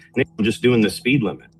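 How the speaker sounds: ordinary delivery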